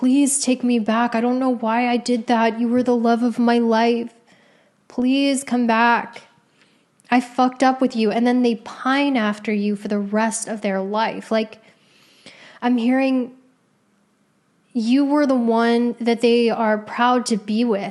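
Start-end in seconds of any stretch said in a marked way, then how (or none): 0.0-8.1 put-on crying voice. Acting out a cheating partner calling to beg: imitating someone crying. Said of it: "they call you crying".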